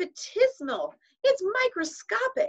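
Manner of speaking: very high pitch rising with each word. A woman reacts as children crowd around the paper, voice rising higher. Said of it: "Her voice was rising higher with every word".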